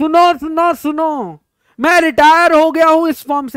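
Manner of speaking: high, loud, town crier-style announcer's shout. Imagining a retiring man announcing it himself, shouted like a public announcement. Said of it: "ऐसे चिल्लाने लगेगा".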